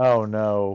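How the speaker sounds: acted unhappy, dismayed voice. Retelling own reaction to bad news in front of in-laws: imitating own unhappy dismay. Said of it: "very, very not happy".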